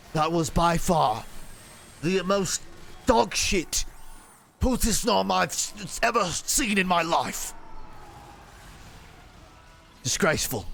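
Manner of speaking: scathing, harsh celebrity-chef style delivery. Judging someone's attempt before calling the next one up, attempted Gordon Ramsay impression. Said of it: "I'm trying to do like Gordon Ramsay".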